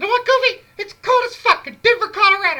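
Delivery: squeaked high, loud and swooping. Speaker retells a message he sent his then girlfriend, in cussing Mickey Mouse voice. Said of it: "my cussing Mickey Mouse".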